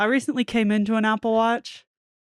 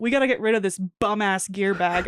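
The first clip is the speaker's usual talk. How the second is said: ordinary delivery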